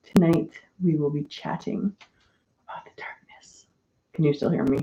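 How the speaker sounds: hushed whisper. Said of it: "I shouldn't whisper".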